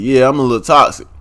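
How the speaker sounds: ordinary delivery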